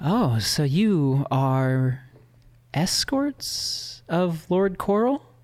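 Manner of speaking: slow, deliberate, regal delivery. Voicing the Raven Queen addressing four visitors: Raven Queen voice. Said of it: "the Raven Queen, uh, uh, addresses you four, and she says".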